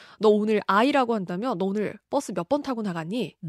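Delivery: normal talking voice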